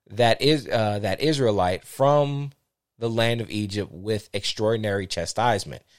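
plain

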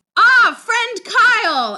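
thrilled, very high, swooping sing-song voice. Retelling how a man greeted his friend, imitating an excited greeting. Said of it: "he gets all excited".

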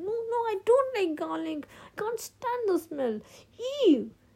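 very high, heated, revolted and disgusted voice. Simi, asked to chew a garlic clove, answers him, heated, disgusted protest. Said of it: "looked at it with disgust and protested heated".

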